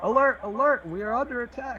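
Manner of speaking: very high, loud, alarmed shout. Narrating the game, voicing another enemy raising the alarm, shouting an alarm. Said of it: "another one shouting out".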